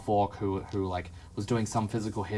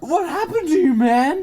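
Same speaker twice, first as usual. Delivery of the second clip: very high-pitched, loud, thrilled, excited cry; 13 dB louder than usual. Speaker retells a man running over to greet someone: retelling an excited greeting. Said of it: "he's like extra excited".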